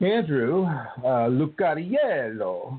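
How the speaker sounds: put-on, attempted Italian accent. Thanking a caller, the speaker says the caller's name in an attempted italian accent. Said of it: "I try to do that with an Italian accent".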